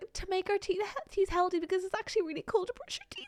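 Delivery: put-on small child's Scottish accent. Quoting kids the speaker heard, in a little kid Scottish accent. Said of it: "little kids and little Scottish accents being like".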